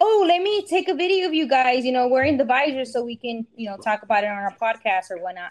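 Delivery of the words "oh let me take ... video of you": plain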